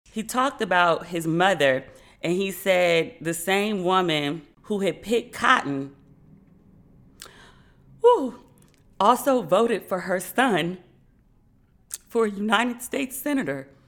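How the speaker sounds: choked-up, tearful, tearing-up voice. Speaker recounting a video that moved them, tearing up. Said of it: "I'm tearing up again thinking about it".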